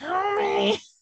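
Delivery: put-on nasal voice. Imitating how the other speaker's nose sounded: imitating a nasal Homie. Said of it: "your nose kinda went".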